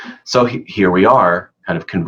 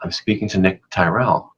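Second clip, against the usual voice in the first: ordinary talk, nothing marked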